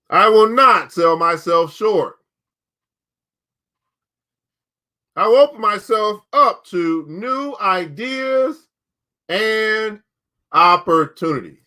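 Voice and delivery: firm, resolute voice full of conviction. Book club host leads listeners in the affirmation of the day, with resolve and conviction. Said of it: "Say it with some resolve or some conviction".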